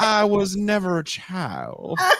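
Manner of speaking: put-on slow, high Southern dandy drawl. Retelling how they read a line aloud, Southern dandy accent. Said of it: "I read it with an accent, with a fucking Southern dandy accent".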